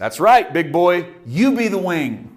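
loud booming delivery. Retelling Ruth's reply to the man she asked for protection, booming Ruth voice acted out. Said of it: "you can hear the spirit booming through this little girl".

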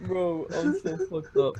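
very slow, drawn-out, swooping, blubbering sobbing speech. Retelling how someone talks when he starts crying: imitating someone crying. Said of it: "When he starts crying, he goes".

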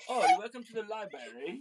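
posh, fancy put-on British accent. Joking with kids about the word library, in a fancy british accent. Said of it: "do I sound all fancy and British?".

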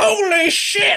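furious, very high-pitched angry yell. Recounting the tram driver's reaction as his tram gets smashed, retelling an angry shout. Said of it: "And it's like he's really angry".

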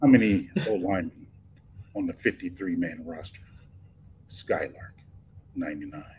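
low sexy voice. Asked to repeat a phrase a little deeper and sexier, in a deeper, sexier voice. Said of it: "Like a little bit deeper".

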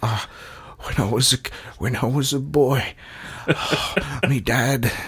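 exaggerated put-on Australian accent. Mocking Australian actors in dramas, doing an overdone Australian actor impression. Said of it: "That's my impression of every Australian actor in a drama".

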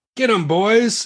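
very high-pitched shout. Narrating a fight, the narrator voices a foe calling on his men: shouting. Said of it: "He shouts out".

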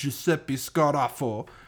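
put-on Italian accent with Japanese-style sound. Reading out a crime family member's name: JoJo's Japanese Italian accent. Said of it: "You did that in the JoJo's, like, Japanese Italian".

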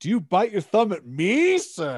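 put-on slow, high, top-of-the-lungs yell. Retelling two lines from a first Romeo and Juliet show: imitating own past yelling. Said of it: "I yelled them at the top of my lungs".

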